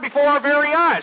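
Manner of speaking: normal talking voice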